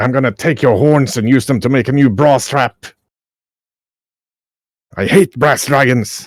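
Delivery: giant voice, words hissed out. Narrating a fight, voicing the giant as it hisses at an opponent: hissing giant voice. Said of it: "the giant hisses at him like".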